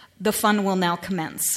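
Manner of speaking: put-on flat deadpan delivery. Speaker quotes a TV character addressing children; imitating Seven of Nine's deadpan. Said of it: "she says deadpan to the kids".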